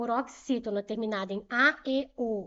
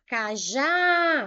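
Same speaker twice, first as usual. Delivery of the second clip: last syllable já of cajá stressed strongly; 2 semitones higher, 6 dB louder than usual. Portuguese stress test, calling out the word: stress on já in cajá. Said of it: "O já eu chamei mais forte".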